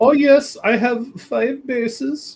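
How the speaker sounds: put-on high-pitched Indian accent. Echoing a friend's story about a game, imitating Marcel in an Indian accent. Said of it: "you making my guy sound Indian?".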